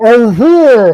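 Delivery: loud, garbled speech through a full mouth. Narrating a scene, a character answers through a mouthful of cookie. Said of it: "Sheik says through a mouthful of cookie".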